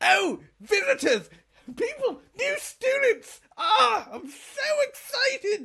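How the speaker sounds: very high, squeaky, loud, excited tiny-gnome voice. Narrating a game scene where a gnome greets new students in a shop, small gnome voice. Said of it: "a very small gnome climbs up to the stool".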